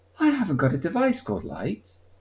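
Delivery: very calm, serene, unbothered sing-song voice. Speaker retelling how the voice assistant answered his command, imitating Alexa very calmly. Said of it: "she just says it very calmly".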